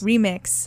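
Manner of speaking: hard stress on the word REMIX.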